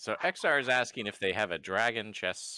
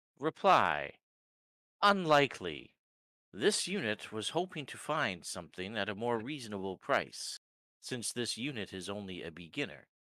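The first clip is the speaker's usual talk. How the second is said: prim, stiff, formal artificial-being voice. A construct character replies to a blacksmith's offer, formal construct speaking. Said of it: "Reply. This is agreeable. Query. / "What's your name, son?"".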